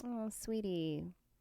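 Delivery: put-on condescending "sweetie". Imitating how some people say it: condescending sweetie. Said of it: "when they're saying it in a way".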